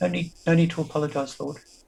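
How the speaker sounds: tiny, squeakiest, very high sprite voice. A small sprite hovering before a character answers an apology, squeakiest sprite voice. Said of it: "That squeakiest of voices says".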